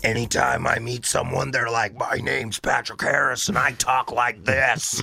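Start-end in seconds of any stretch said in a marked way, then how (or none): 2.0-5.0 heavily overdone put-on dude voice. Imitate someone you've just met introducing himself, in a Steve-O-like voice. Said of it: "Little too Steve-O".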